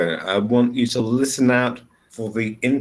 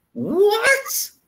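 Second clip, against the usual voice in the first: pitch rises at the end of "what". Intonation lesson, echo question about a price paid, rising pitch on what. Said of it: "It goes up".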